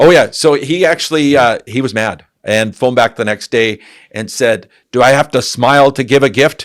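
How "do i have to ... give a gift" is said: angry, pitched-up put-on German accent. Retelling what a customer said when phoning back, imitating a German accent. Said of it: "He had a German accent".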